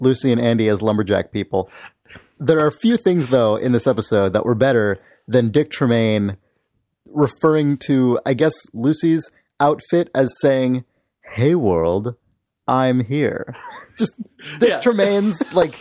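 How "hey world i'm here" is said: proper, carefully enunciated voice, much slower. Recapping a Twin Peaks episode, quoting a line about Lucy's outfit: Dick Tremaine's proper enunciation. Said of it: "incredibly proper sort of elocution enunciation".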